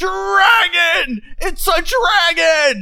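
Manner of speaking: alarmed screaming. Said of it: "just start screaming".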